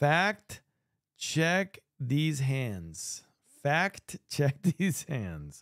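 very slow, deliberate, careful word-by-word pacing. Speaker announces a statement and says it very slowly to avoid fumbling. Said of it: "I'm going to say this very slowly".

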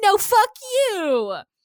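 mock childish voice, very high and loud. Retelling a character's comeback to a counselor: childish retort imitated.

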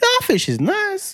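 passionate high falsetto. Asked about the high pitch, he voices how the guy feels: emotional falsetto. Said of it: "It's my emotional falsetto".

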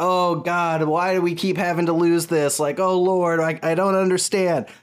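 put-on lamenting, crying out aloud in dismay. Retelling a religious contestant after his tribe loses: imitating someone lamenting aloud. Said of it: "vocally, like, being like".

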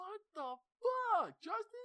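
very loud, very high, dragged-out screaming yell. Retelling what a friend screamed at someone: imitating someone screaming. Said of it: "Aaron screamed".

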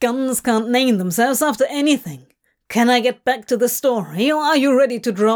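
ordinary delivery

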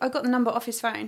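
ordinary talk

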